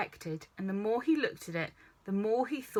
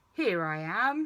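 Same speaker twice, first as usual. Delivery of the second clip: rumbling, growly bear-like voice. Reading a story aloud, Pooh answers Christopher Robin from behind him: growly Pooh voice. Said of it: "said a growly voice behind him".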